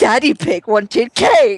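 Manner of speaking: mock slow, careless, very loud shouted blurt. Recapping events, the speaker repeats what Iris shouted, imitating a really loud shout. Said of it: "Like in a really loud voice".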